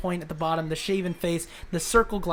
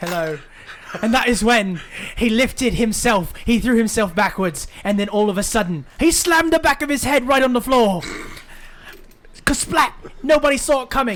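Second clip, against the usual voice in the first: very loud, high, put-on British accent; 5 semitones higher, 9 dB louder than usual. Voicing a storyteller character after being asked to do it: British accent. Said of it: "he's the only British guy".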